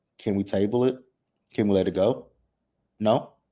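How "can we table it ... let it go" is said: ordinary talk, nothing marked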